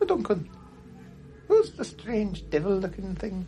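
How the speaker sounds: small, high, slow puppet voice. In a role-play, a little voice from in there calls to duncan: little voice. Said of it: "You hear a little voice in there".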